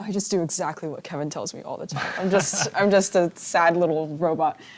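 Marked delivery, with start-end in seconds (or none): none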